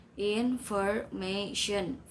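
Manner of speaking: information slowly syllabified into four separate beats.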